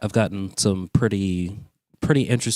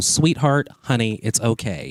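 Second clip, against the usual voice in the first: put-on camp, sweet-talking coaxing voice; 4 semitones higher than usual. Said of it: "I'll talk a little like this and go".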